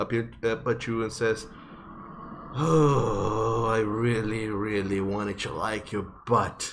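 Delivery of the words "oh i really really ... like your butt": slow, pained, hurting voice with oh drawn out. Voicing a character clutching his crotch and looking up at the party: in pain. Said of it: "a very loud moo of pain".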